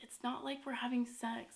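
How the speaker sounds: whispered voice. Retelling what the boyfriend whispered to his mom: imitating someone whispering. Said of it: "whispering a little bit and he's like".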